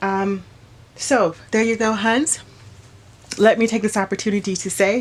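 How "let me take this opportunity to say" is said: very fast, words rushed together. Speaking to Hans in a phone recording, saying it very fast. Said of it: "I said that so fast".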